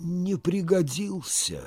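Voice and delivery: embarrassed. Asked why he left his previous place, a man answers, embarrassed. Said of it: "смущенно отвечал Игумнов".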